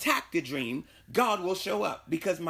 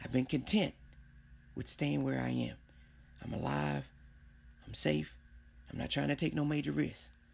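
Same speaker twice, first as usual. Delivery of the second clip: whispering, hushed and quieter; 4 semitones lower, 8 dB quieter than usual. Speaker confides in David, not wanting to say it too loud, whispering. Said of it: "I got to whisper this".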